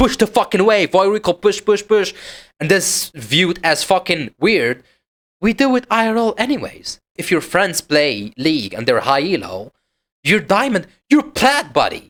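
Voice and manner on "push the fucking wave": put-on screaming, higher pitched. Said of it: "he's screaming in his ears".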